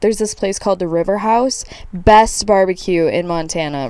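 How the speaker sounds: plain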